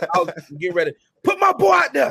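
high-pitched, fast, loud shouted sports-dad rant. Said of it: "the end of LeVar Ball".

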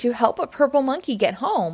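plain reading voice

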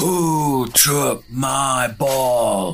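spooky, eerie wailing voice. Reading a spooky story, the big figure in the dark doorway speaks: deep booming wail. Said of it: "With a deep, booming voice, he wailed".

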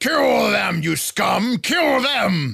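very high, harsh, rough, drawn-out berating yell. Voicing a warrior ordering a sludge creature to attack: yelling and berating. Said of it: "sort of yell and berate this".

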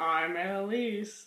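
very low fake deep voice, cracking up laughing. Introducing oneself at the sign-off: put-on deep voice, laughing. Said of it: "I'm trying to say it in a deep voice, but I keep laughing".

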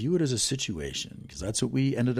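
booming movie trailer narrator voice.

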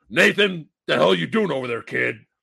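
rough, creaky character voice. Showing how the movie character Sully should sound: Rip Torn-esque Sully voice. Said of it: "he's kinda Rip Torn-esque".

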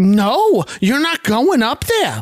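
mock high, drawn-out, defiant talking back. Retelling Edith answering Archie on the stairs: imitating Edith shouting back. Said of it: "Edith shouts back".

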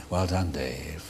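cold, unemotional computer voice, like a machine. Explaining what the character was based on, in a HAL voice. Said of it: "Hal the computer in two thousand and one".

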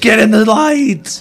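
shrill, booming, very loud, high, drawn-out yell. Retelling watching a Fall Guys game and yelling at the phone. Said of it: "I'm fucking yelling at my phone".

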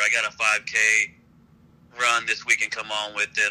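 normal talking voice

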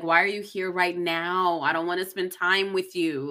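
normal talking voice

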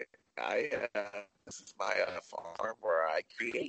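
cracking, breaking voice. Complaining about re-edited old movies, doing a George Lucas impression. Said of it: "that's how George Lucas sounds like".

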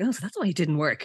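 mock muttering under the breath. Retelling a story, one character replies to another, retelling a mutter under breath. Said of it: "kind of under his breath".

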